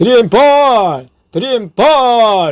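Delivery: slow, high, loud shouted cry.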